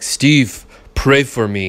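blunt, simple, primitive caveman-style voice. Retelling what Omar said after hurting his knee: imitating Omar's caveman voice. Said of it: "he kind of sounds like a caveman".

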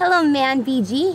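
usual speaking voice

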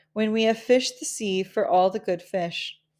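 ordinary delivery

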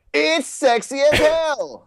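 very high yell, every word drawn out. Showing how Samuel L. Jackson would say the line: yelling Samuel L. Jackson impression. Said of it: "Samuel Jackson just yells, so he would just be like".

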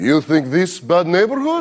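put-on Russian accent with broken English. Speaker answering two thugs on a late walk home, fake Russian accent. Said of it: "I fake a Russian accent".

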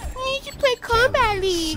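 high-pitched mocking commenter voice.

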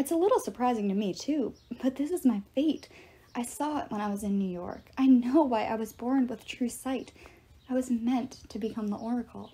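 plain reading voice

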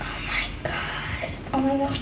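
soft, scared, terrified whisper.

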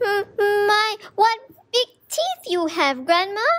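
shrill, very high stutter, "My" drawn out. Reading the girl stuttering at the wolf in Grandma's bed.

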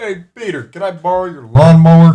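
very loud cartoon voice. Announcing a Family Guy role-playing club, the speaker does a Joe Swanson impression. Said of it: "Here's my Joe Swanson impression".

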